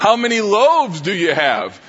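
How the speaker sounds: slow, knowing, sing-song sarcastic tone. Acting out a quoted question to the disciples: put-on sarcastic tone. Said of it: "there has to be an element of sarcasm here".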